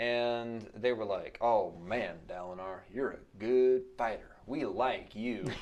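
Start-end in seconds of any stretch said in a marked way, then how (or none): 1.4-5.5 put-on Southern US accent. Retelling what the Radiants said to Dalinar: southern accent. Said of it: "Did you imagine all the Radiants with a southern accent?".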